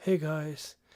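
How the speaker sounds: relaxed voice. Showing how a future video greeting could sound: more chill voice. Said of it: "I think I'll use kind of a more chill voice".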